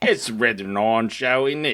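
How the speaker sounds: Australian-sounding accent. Co-host restating the show's name, sounding Australian. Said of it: "That sounded more Australian".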